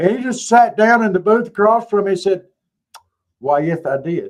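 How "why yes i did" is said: joking, put-on Spanish accent. Retelling a waiter's joking reply about sweet tea: imitating a Spanish accent. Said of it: "he did it in a Spanish accent".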